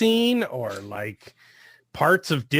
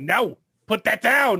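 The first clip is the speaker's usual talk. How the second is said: angry scolding, pitched up; 6 semitones higher than usual. Showing how to scold a pet caught doing something wrong, angry scolding. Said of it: "angrily say".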